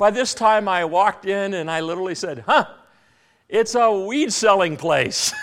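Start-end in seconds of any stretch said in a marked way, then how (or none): 2.5-5.3 put-on, unmistakably sarcastic tone. Walking into a fourth nursery, the speaker retells a remark: retelling an obviously sarcastic remark. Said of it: "My sarcasm was obvious".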